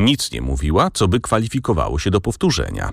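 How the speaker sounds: plain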